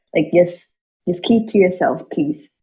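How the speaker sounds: stage-whispered aside. In a role-play scene, telling someone to keep it to themselves, whispering. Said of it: "I'm like whispering this so the rest of the crowd doesn't hear this".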